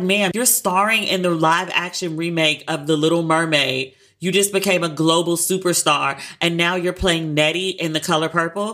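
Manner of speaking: usual speaking voice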